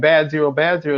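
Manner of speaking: ordinary delivery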